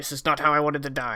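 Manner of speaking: muttered under breath. A character marching forward into a cave, muttered under breath. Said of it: "he mutters under his breath".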